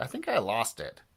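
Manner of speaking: usual speaking voice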